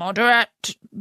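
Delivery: plain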